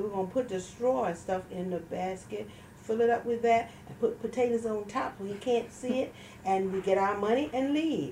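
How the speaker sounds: ordinary delivery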